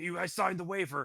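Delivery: shrill, high, loud hollering. Voicing a tavern owner who yells at everybody: tavern owner yelling. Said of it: "starts yelling at everybody".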